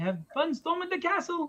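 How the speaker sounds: put-on elderly man's voice and delivery.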